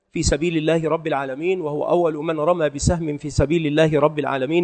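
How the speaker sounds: usual speaking voice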